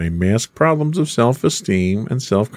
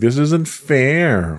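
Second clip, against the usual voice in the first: put-on whiny, complaining teen voice, slow and drawn out; 4 semitones higher than usual. Illustrating a teen's low frustration tolerance: mock-whiny teen complaint. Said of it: "That was my whiny voice".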